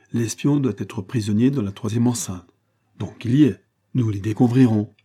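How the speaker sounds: ordinary delivery, nothing marked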